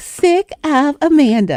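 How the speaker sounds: put-on very high little-girl voice. Retelling how the niece would answer in a family joke: little baby girl voice. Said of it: "in her little baby girl voice".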